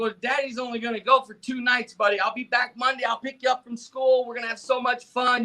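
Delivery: put-on bright, positive, upbeat, reassuring tone. Retelling what he told his crying son before leaving: imitating his own upbeat reassurance. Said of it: "trying to be positive like I always did".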